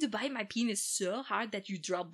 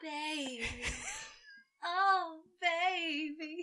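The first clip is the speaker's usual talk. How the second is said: intimate, seductive, high, close to the mic; 7 semitones higher, 3 dB quieter than usual. Acting out a man crawling over on all fours: imitating Baron seductively. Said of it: "I have to get so close and I'm so seductive".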